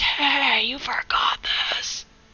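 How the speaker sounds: unvoiced, breathy stage whisper of a mock yell. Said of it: "preferably not in that voice".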